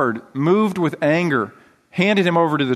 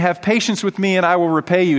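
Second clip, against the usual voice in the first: plain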